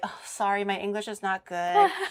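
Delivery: mock modest, humble, self-deprecating tone. Imitating Japanese streamers who apologize modestly: imitating a modest apology. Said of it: "every time they go like".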